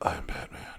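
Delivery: smooth, breathy, whispered delivery. Comparing actors' Batman voices, imitating Keaton: smooth Keaton Batman voice. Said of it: "Keaton's all smooth with it".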